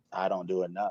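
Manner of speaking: low, soft, self-doubting voice. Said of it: "in my mind, I'm like".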